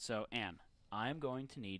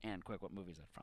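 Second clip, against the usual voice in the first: ordinary talk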